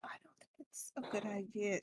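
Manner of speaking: muttered under breath. Voicing a character objecting to a picnic: said under her breath. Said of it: "saying this kinda under her breath".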